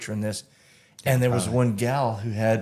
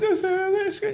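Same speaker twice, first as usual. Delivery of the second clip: put-on frantic, alarmed, panicked scream; 3 semitones higher than usual. Retelling what a woman told the speaker's buddy, retelling a panicked scream. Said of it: "and she was screaming".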